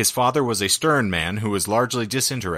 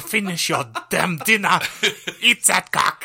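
terrible fake German accent, very high-pitched; 10 semitones higher, 3 dB louder than usual. Host acting out a woman scolding a man, world's worst German accent. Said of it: "it was the world's worst German accent".

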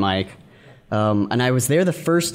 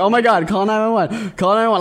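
mock frantic panic, high crying voice; 9 semitones higher, 4 dB louder than usual. Retelling finding a man she thought was dead, imitating her past self crying in panic. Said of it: "I'm like crying over him".

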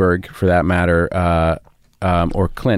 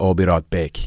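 put-on South African accent. Showing how a phrase sounds in the accent: south african accent. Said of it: "they would say".

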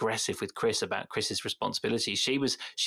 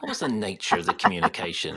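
sexy policeman voice, low, intense and scholarly; 4 semitones lower, 4 dB louder than usual. Echoing another speaker's question back to them: imitating a sexy policeman voice. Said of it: "You sounded like a sexy policeman there".

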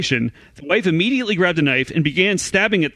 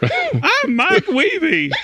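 very high, swooping, sing-song put-on voice; 12 semitones higher than usual. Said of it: "it was an impersonation".

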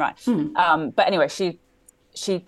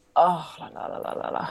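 mock grumpy French accent, quieter; 4 dB quieter than usual. Imitating French people saying "ooh la la" grumpily: imitating a grumpy French "ooh la la". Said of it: "they go like".

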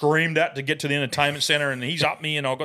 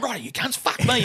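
exasperated, fed-up voice, pitched up; 8 semitones higher than usual. Retelling a friend breaking up an argument: imitating an exasperated dad. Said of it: "Brycey's standing like dad".

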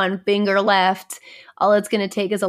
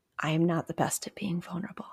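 very quiet, hushed, under-the-breath delivery; 11 dB quieter than usual. The speaker admits something about themselves to the listener, said quietly. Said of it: "Do you notice I have to say that like quietly?".

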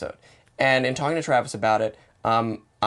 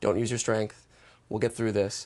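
put-on comforting intimate voice, lower and quieter; 3 semitones lower, 5 dB quieter than usual. Retelling a film scene and quoting the character: imitating Max speaking comfortingly. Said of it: "In a very comforting way".

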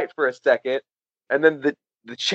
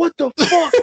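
mock shrill raging scream, pitched very high; 11 semitones higher than usual. Retelling a fight where someone pins another to the wall: imitating someone screaming.

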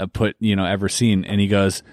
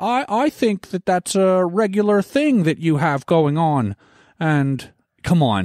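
put-on Canadian man's voice, pitched higher; 9 semitones higher than usual. Imitating how the Canadian guy always speaks: Jordan Peterson impression. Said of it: "the Canadian guy that always speaks like this".

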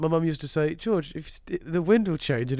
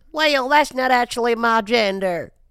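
badly put-on Southern American accent, raised voice; 8 semitones higher, 7 dB louder than usual. Retelling their reply to an old man who called them little missy, bad American accent. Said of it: "my shit American accent".

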